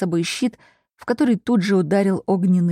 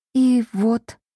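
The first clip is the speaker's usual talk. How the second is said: even more quietly, softer, higher; 3 semitones higher than usual. The girl who fell down the stairs adds to her account, even more quietly. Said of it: "еще тише добавила".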